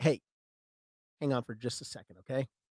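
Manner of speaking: hushed, very quiet, soft voice. Retelling their own words to someone while getting seated, very quiet. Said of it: "Very quietly".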